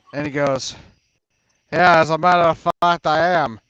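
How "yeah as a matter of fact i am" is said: put-on drunk, slurred speech with words smeared together. Retelling what a guy asking to borrow money answered, imitating drunk slurring. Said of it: "he's slurring his words".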